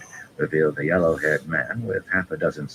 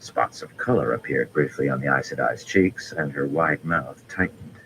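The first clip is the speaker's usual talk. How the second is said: usual speaking voice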